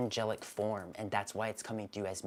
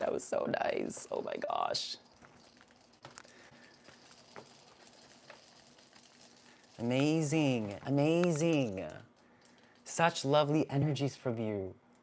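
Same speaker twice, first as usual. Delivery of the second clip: moved, swooping voice close to tears; 4 semitones higher than usual. Thanking someone for being here, the speaker is getting emotional. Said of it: "I'm getting emotional".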